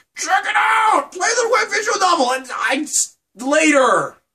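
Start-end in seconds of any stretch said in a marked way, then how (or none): 0.2-2.4 very high, loud, shrieking mock chorus of voices. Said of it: "everyone else is just like".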